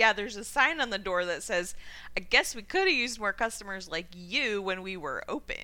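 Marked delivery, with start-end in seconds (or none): none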